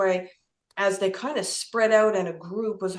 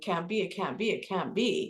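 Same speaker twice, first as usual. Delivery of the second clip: mock, sobbing words coming through tears; 6 dB quieter than usual. Retelling hearing she had died, imitating own past crying. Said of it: "And I'm crying".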